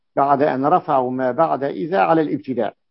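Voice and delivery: ordinary talk, nothing marked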